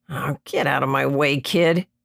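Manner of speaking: mumbled, muttered under the breath. Narrator reads a man brushing aside a boy who jumps in his way, muttering. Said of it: "Drake muttered".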